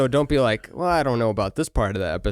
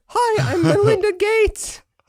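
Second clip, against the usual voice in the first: put-on female voice by a man, pitched higher; 4 dB louder than usual. Doing an impression of Jordan Peterson imitating Melinda Gates: Jordan Peterson impersonating Melinda Gates. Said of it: "An impression of Jordan Peterson doing impressions".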